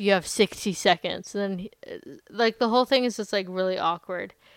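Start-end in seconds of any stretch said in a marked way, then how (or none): none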